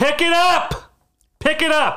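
high, slow, loud yell. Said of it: "And I said".

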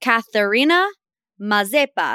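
name pronounced with an unplanned Italian accent. Pronouncing the name of his new girlfriend, an Australian model, Italian accent. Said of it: "I don't know why I sounded Italian".

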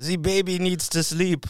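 fake German accent. Chatting about films, putting on a fake German accent. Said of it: "That's German".

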